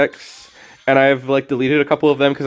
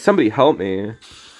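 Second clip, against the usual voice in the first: mock-ironic tone, pitched lower; 5 semitones lower than usual. Imitating Iris rubbing in a win: imitating Iris's ironic plea. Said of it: "being ironic".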